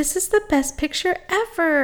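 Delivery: calm, unexcited, quiet and flat, pitched slightly high. Retelling how someone reacted to a picture made for her, imitating a quiet reaction. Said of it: "she was just like really quiet about it".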